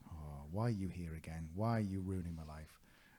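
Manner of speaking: normal talking voice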